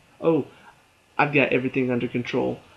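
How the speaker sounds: ordinary talk, nothing marked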